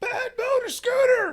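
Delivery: piercing, loud, high-pitched, shrill shout. Retelling a concert story: imitating a woman yelling. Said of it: "a lady behind me keeps yelling".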